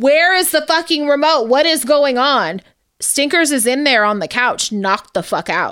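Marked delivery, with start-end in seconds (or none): 0.0-2.6 play-acted, all-out screaming and yelling. Retelling being woken by a loud TV at night: retelling a scream.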